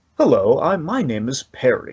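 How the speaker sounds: put-on friendly official voice. Imitating a tax man character who introduces himself: friendly voice of Perry. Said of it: "He just sounds so friendly".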